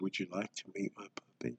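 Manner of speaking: hushed, very quiet, soft painting-show host voice. Joking about puppets, speaker talks real soft like the guy from the painting show. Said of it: "talk real soft like that guy from the painting show".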